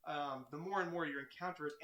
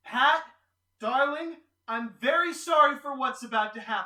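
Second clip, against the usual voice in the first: piercing, very loud, high shriek at full volume; 8 semitones higher, 15 dB louder than usual. Voicing a character aiming a gun at pat: character screaming. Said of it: "and she screams".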